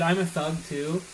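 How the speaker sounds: usual speaking voice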